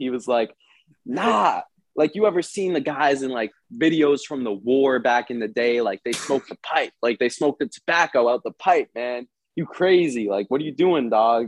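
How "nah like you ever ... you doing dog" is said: normal talking voice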